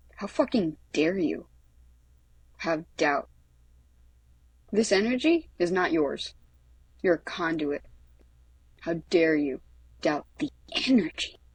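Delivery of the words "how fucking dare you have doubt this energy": ordinary delivery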